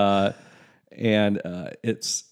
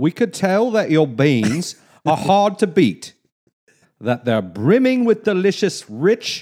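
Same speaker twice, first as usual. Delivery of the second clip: attempted put-on English accent, pitched up; 7 semitones higher, 4 dB louder than usual. Trying to read a text aloud in a put-on English accent. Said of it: "You got to do it in an English accent. ... Let me try".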